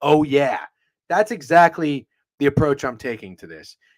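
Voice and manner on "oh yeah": bursting ad mascot voice. Retelling how the Kool-Aid Man barges in through a wall: Kool-Aid Man voice. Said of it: "the Kool-Aid man would barge in, knock over a brick wall, and say".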